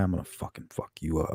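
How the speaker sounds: quiet, hushed, antagonizing whisper. Retelling high school fights, threatening the other fighter: retelling own past whisper. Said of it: "And then I'd whisper to the guy".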